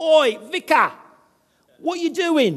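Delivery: loud, high-pitched Cockney shout. A young man shouts at him over a fence while he mows, retelling a shouted Cockney accent. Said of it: "shouting out in his Cockney accent".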